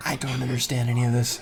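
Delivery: quiet, soft, hushed half-whisper. Voicing the daughter who comes up to the player's character: half-whispering. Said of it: "comes up and whispers and says".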